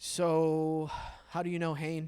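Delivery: bone-dry, expressionless, flat and slow deadpan. Retelling a joke question to break a quiet moment: retelling a dry deadpan line. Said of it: "And I said it so dry".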